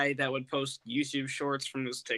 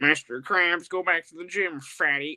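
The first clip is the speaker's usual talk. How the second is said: loud cartoon-character voice, fully in character; 3 semitones higher, 6 dB louder than usual. Playing a requested cartoon line after saying the impression is not very good: Squidward voice. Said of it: "one of you has to be Squidward".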